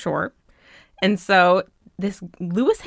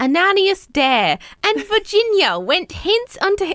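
fake British accent, pitched very high; 12 semitones higher than usual. Reading a stone's inscription aloud to listeners, in a faux british accent. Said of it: "my faux British accent".

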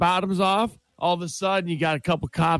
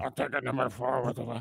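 low, disguised put-on voice; 5 semitones lower, 9 dB quieter than usual. Placing a drive-thru order again, pretending to be someone else: disguised different voice. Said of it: "I can do a different voice".

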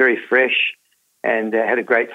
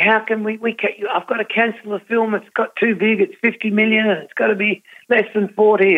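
mock yelling, much higher; 11 semitones higher than usual. Recounting how a man yelled at him down the phone: retelling a yell. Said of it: "he's yelling at me".

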